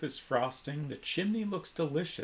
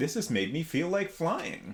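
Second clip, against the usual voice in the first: joyful, exclaiming outburst. Reading a story aloud, voicing her line as she vanishes: joyous exclamation. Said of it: "you hear her joyously exclaim".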